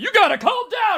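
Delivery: high, shrill, very loud yell. Discussing a couple's fight, acting out the man telling her to calm down, imitating a man yelling. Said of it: "he's yelling the entire time".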